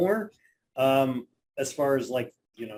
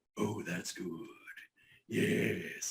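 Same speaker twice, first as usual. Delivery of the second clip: slow, whispery, breathed-out creepy voice; 8 semitones lower, 11 dB quieter than usual. Doing a second version of the cartoon villain: creepy Saturday morning Robotnik voice. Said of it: "the Saturday morning one where he sounds like a creeper".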